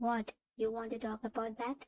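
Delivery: plain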